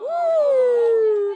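high, loud celebratory whoop.

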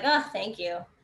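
sarcastic, heavily insincere tone. Explaining how not to say thank you, a sarcastic thank you. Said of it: "You don't want to say it sarcastically".

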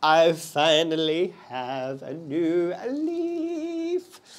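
slightly screechy voice, with leaf drawn out. Showing viewers an update on a houseplant, a bit screechy. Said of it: "that sounded a bit screechy".

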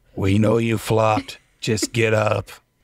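whispered line, as if close to the ear. Voicing Calico, who comes over to a fallen player: whispering in someone's ear. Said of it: "whispers in your ear".

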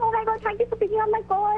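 overwhelmed, thrilled, shaking with excitement. On a call from India that someone picked up, shaking with excitement. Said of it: "I'm shaking right now".

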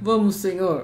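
deep, forced, strained character voice.

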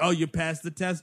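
ordinary talk

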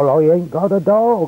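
put-on broad Hampshire accent. [name] answers the sergeant who called at his house about a dog license, in a broad Hampshire accent. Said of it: "in his broad Hampshire accent".

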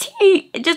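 very high voice breaking up and cracking. Explaining why uploads have been irregular: voice cracking. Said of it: "my voice cracked so bad".

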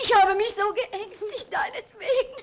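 tearful. Speaking to their mother after upsetting her, crying. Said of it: "Warum weinst du denn?".

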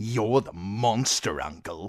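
contemptuous, scornful sneer. Called a monster by his uncle, a nephew sneers back at him. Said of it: "Joffrey sneered".

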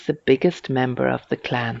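ordinary delivery

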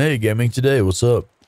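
hoarse, failing, sick-sounding voice. Greeting a viewer named Gaming Today on stream, sounding sick. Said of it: "He sounds so sick".

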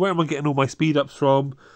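ordinary delivery

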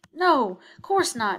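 quick, rushed, too hasty delivery. Answering a little boy's frightened question, denying too quickly. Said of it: "denied Stacy too quickly".

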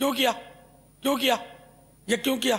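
harsh, confrontational, aggressive tone. Showing what an aggressive rather than wise manner sounds like: harsh aggressive tone. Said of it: "اب یہ ہے جارحانہ انداز".

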